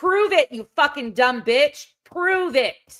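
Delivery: angry, pissed off, mad. Ranting on stream at someone accused of spreading misinformation, angry. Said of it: "I'm pissed".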